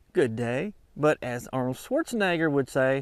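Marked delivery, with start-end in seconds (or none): 0.1-0.7 radio commentator delivery. Signing off in the manner of Paul Harvey: Paul Harvey voice. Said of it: "As Paul Harvey would say".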